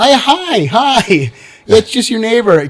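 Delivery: fake, slow, drawn-out high-pitched voice. Retelling greeting someone as their neighbor, put-on high-pitched voice. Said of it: "I'm trying to use like a high pitched voice".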